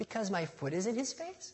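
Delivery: put-on sweet, cute, high little-girl voice. Speaker retelling what Audrey answered when asked why Jack cried; imitating Audrey's cute little voice. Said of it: "she says in her cute little voice".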